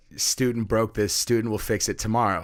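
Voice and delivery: ordinary talk, nothing marked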